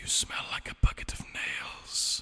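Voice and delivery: quiet whispering. Speaking into a guard's mind as a bard of whispers: whispering. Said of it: "It hears me whispering in its mind".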